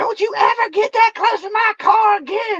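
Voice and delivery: very high, loud, screaming voice. Retelling how the lady of the house screamed about her car: imitating a woman screaming. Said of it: "screaming and cussing".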